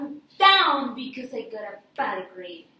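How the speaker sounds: impassioned, very loud, passionate cry. Practicing a line again after being told to say it with passion. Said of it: "So say it with passion now".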